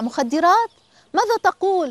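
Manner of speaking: high, startled, alarmed outcry. A mother hears the doctor's news about her son: crying out in alarm. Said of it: "صاحت أم هشام بفزع".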